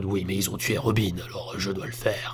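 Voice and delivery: low, soft, hushed voice sounding ill. Describing a wished-for scene where Batman answers Alfred: fake-sick Batman voice. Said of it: "C'est ma voix de Batman quand je suis malade".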